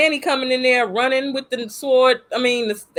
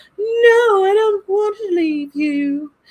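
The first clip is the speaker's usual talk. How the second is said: put-on British accent, high and raised; 8 semitones higher than usual. Retelling a scene, voicing Abra speaking to Danny, with a British accent. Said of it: "I don't know why I gave her a British accent".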